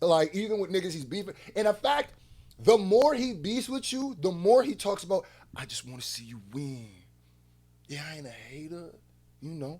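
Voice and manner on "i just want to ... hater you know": soft, hushed, imitated voice. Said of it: "this is how he talks".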